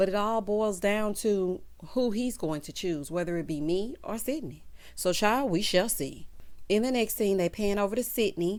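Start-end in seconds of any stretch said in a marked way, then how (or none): none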